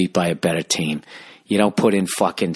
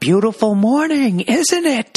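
mock stretched-out shout, very high; 3 dB louder than usual. Retelling a man who screamed out with an angry look: retelling a yell. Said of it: "He just yelled out".

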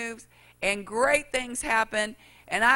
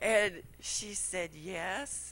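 plain

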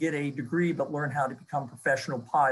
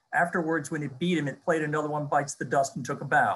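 normal talking voice

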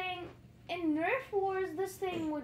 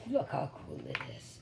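very low, rough, creaky spooky voice. Shoving an object toward someone's face, in a scary voice. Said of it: "How's my scary voice?".

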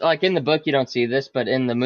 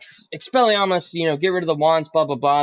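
normal talking voice

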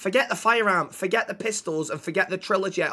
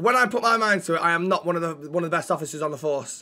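ordinary talk

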